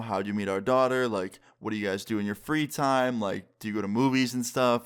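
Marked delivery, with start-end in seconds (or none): none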